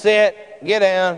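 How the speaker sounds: low, calm, composed voice. Contrasting ways of giving commands, imitating a quiet, calm command. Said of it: "very quietly and calmly".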